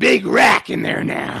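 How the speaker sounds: put-on lecherous voice. Retelling what Jim would say when asked about a girl: imitating Jim. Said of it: "He'd be like".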